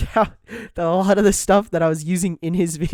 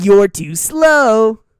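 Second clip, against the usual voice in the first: loud, edgy, mocking, drawn out slow; 4 semitones higher, 8 dB louder than usual. Imitating the edgier version of the hero taunting: edgier Sonic voice. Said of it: "He's edgier".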